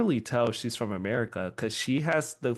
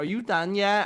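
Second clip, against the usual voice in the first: mock valley girl voice, higher; 9 semitones higher than usual. Teasing a cousin while shopping: imitating a Valley Girl accent. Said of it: "that became my favorite character".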